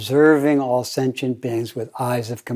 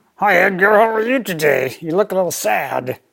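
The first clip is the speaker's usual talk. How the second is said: put-on puppet voice, much higher; 8 semitones higher, 4 dB louder than usual. Explaining how a ventriloquist talked for his puppet, doing Charlie McCarthy puppet voice. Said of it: "But he would talk like this".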